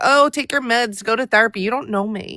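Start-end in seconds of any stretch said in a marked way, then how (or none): none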